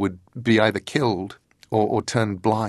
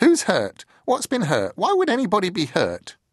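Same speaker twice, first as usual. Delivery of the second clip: put-on very high, cracked, swooping old voice; 10 semitones higher than usual. Reading aloud, old Mrs. Hempstock answers Letty: Mrs. Hempstock's high cracked voice. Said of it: "Said a high, cracked voice".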